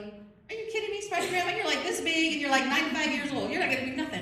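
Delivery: high, loud mocking scoff. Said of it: "So they're all mocking her".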